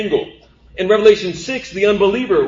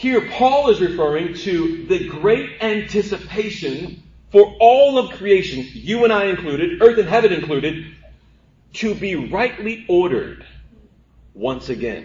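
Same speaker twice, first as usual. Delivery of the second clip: measured, careful, slower, deliberate delivery. A speaker explaining a Bible passage repeats a point, slower and deliberate. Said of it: "I'm going to say that slower".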